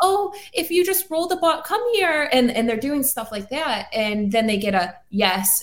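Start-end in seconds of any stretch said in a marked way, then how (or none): 0.0-2.3 put-on tiny, very high small-child baby talk. Imitating investigators coaxing a child spirit: imitating baby talk. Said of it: "let's say baby talk or the, the small voice".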